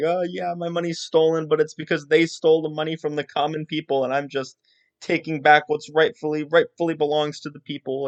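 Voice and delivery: play-acted high crying, sniffling, tearful pleading. Retelling how one character talked another into it: imitating someone crying. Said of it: "getting really sad and, and sort of crying and saying like".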